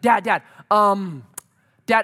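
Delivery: very slow, dragged-out, loud, every word stretched. A father retells his three-year-old daughter at bedtime, imitating a three-year-old stalling. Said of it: "And she's like".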